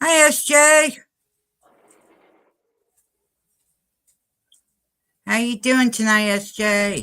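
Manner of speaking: high-pitched voice, talking while holding the breath. Greeting S J while holding breath to talk, in a high-pitched voice. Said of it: "my voice sounds a little bit high pitched".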